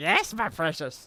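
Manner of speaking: put-on creepy creature voice. Reacting to a creature that speaks like Gollum, Gollum voice. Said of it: "He speaks like Gollum!".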